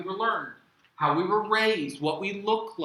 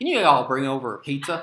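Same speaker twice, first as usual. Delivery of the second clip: put-on heavy, laid-on Southern accent pitched low; 5 semitones lower, 4 dB louder than usual. Telling how he orders pizza by phone, the speaker uses a thick southern accent. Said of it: "go deep with my Southern accent".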